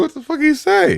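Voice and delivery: high, stunned, confused disbelief. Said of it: "I was like".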